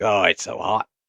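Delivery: bad, terrible put-on Australian accent. Quoting someone the speaker talks to in australia, in a terrible australian accent. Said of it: "do a terrible Australian accent".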